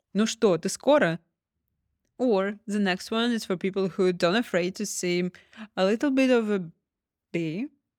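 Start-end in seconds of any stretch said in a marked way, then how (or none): 0.2-1.2 loud, irritated, impatient annoyance. Teaching a russian phrase, showing impatience in the voice: annoyed, impatient. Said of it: "Can you hear this annoyance? Impatience in my voice".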